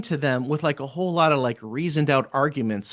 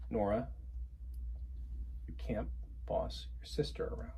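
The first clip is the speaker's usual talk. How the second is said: calm, controlled, very soft hushed near whisper; 4 semitones lower, 17 dB quieter than usual. Role-playing correcting a child, starting out calm. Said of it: "We're gonna start calm".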